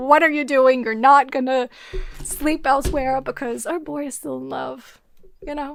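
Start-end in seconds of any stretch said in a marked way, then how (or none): none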